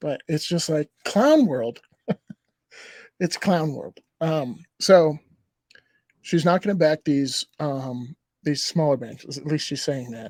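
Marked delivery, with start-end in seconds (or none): 0.0-4.0 talking through laughter. Talking about banks that will not be backed, laughing while talking. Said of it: "I'm sorry that I'm laughing".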